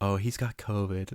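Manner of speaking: slow, sickly-sweet, sappy sentimental voice. Describing a zombie scene, quoting one character's reply, mock-sappy voice. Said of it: "in like the most sappy voice".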